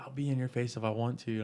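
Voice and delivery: put-on hostile, angry, spitting, in-your-face yell. Retelling how the stepdad yelled in the speaker's face: imitating someone yelling. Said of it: "was yelling and spitting at my face".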